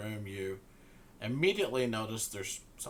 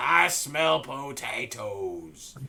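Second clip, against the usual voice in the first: put-on old Southern man voice; 4 semitones higher, 8 dB louder than usual. Told to sound more scottish, the narrator tries the line again: old southern man voice. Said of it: "You sound like an old Southernman".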